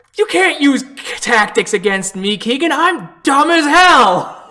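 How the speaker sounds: mad goblin character voice.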